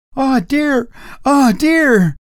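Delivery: frightened, scared, high-pitched urging tone. Narrator reading the housekeeper's reply after being scolded by the master, terrified. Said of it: "I said smartly to the housekeeper, "I want those two women discharged tomorrow. It's an outrage. You ought to be more careful." But she was not attending to me. Her face was distorted with terror. / B".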